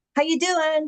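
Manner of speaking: perky, high-pitched, goofy voice. Retelling greeting with finger guns to lighten the mood: retelling own goofy greeting. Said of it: "I don't mind being a goof".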